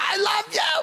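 mock very high, shrill, loud yell. Recounting a woman yelling after the speaker while walking away: retelling her yelling. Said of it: "She's yelling after me".

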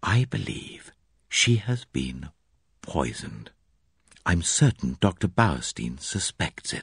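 slow, drawn-out, hushed, secretive whisper. The narrator, with the others out of earshot, speaks to her, whisper. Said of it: "I lowered my voice to a whisper".

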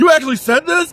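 high, loud shocked outcry blurted out. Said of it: "and then Austin's like".

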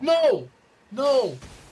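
all-out, very loud, high shouting at full volume. Playing a game with a teammate who ignores the map, yelling. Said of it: "What are you yelling for?".

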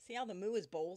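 ordinary delivery

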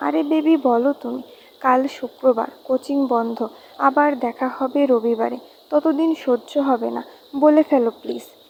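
ordinary delivery

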